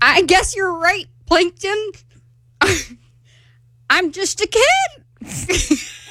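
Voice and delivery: put-on cartoon voice delivered slowly. Auditioning by reading a SpongeBob monologue aloud: SpongeBob SquarePants voice. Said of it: "your audition to be SpongeBob SquarePants".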